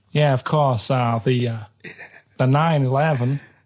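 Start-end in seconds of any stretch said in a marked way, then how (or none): 2.3-3.3 put-on American accent. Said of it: "Do that American accent again?".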